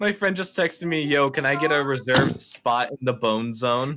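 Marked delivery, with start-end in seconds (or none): none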